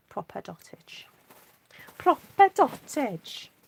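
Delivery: lilting, sing-song Welsh accent, drawn out and played up. Admiring stamped dots while crafting, repeating a phrase: welsh accent. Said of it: "that's my Welsh accent coming out now".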